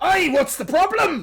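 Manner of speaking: put-on high loud yell. A game master voices Urgle, called over by another character, yelling out. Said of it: "He yells out".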